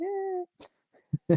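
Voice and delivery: high, excited, happy squealed cheer.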